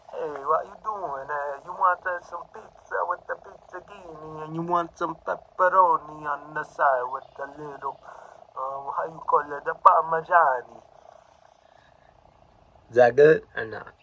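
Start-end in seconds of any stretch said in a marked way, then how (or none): 0.1-10.8 joking put-on Italian accent, pitched up. Speaker showing off their talents to listeners, in a mock Italian accent. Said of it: "You can be Italian".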